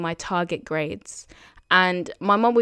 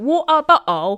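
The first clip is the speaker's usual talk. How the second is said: exaggerated put-on British accent, loud and high; 8 semitones higher, 7 dB louder than usual. Speaker mimics how Americans imitate their way of speaking: Americans' fake impression of our accent. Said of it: "whenever they try and do impressions of us".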